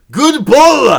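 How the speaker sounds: very high, very loud shout. Retelling a player's reaction to a perfect pitch, retelling a yell. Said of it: "He yells out".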